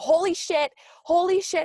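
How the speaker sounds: play-acted, high, drawn-out freaking-out panic. Retelling seeing a spider while driving: imitating own panicked self. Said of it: "I'm freaking out".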